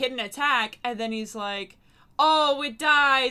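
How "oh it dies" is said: loud, theatrical, dramatic storyteller delivery. Retelling how the DM announced that a monster died: imitating Mike, all dramatic. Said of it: "all dramatic and stuff".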